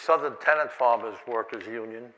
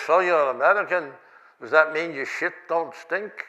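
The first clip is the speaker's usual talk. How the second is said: put-on speaking with a Yiddish accent; 3 semitones higher than usual. Retelling a man answering an angry American crowd, in Franz's Yiddish accent. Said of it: "he stands there with his Yiddish accent".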